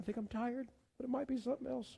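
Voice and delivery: soft emotional voice. Speaker telling a room they are praying for them, getting emotional. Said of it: "I'm getting emotional".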